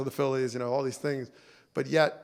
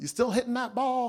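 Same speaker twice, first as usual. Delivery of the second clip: put-on very high southern grandpa voice; 10 semitones higher than usual. Speaker recalls the question his grandfather always asked him before they'd leave: imitating a southern accent. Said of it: "he had that southern accent".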